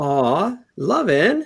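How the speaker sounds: high-pitched grating voice. The narrator voices Eva calling from behind the player's character: annoying Eva voice. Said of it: "you hear a really annoying voice from behind you".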